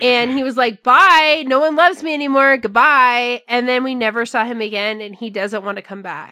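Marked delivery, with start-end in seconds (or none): 0.8-3.4 loud, dismissive, sarcastic delivery. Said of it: "the most sarcastic, like, imagine the Queen waving goodbye".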